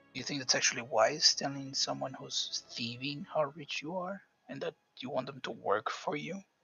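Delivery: whispered voice. After excusing themself for a second, speaking aside, whispering. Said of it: "and I'm gonna whisper".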